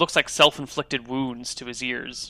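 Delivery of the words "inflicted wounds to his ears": normal talking voice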